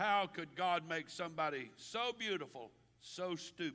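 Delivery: ordinary delivery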